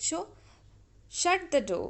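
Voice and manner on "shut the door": tone falling, not rising. Demonstrating intonation, the speaker gives an example command, falling-tone command. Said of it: "my tone is falling here".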